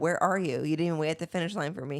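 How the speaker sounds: ordinary delivery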